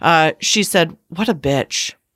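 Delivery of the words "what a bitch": low, muttered aside under the breath. Retelling what a passing woman said at the grocery store: imitating someone muttering. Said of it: "under her breath".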